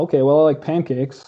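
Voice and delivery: ordinary talk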